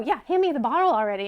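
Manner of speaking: put-on frustrated voice. Acting out someone who keeps asking for a water bottle: imitating a frustrated person. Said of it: "it sounds frustrating".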